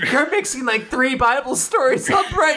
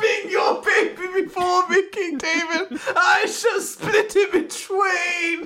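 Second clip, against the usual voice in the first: mock screaming, higher pitch; 6 semitones higher than usual. Quoting a guy's recording of himself, imitating someone screaming. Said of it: "He's just screaming".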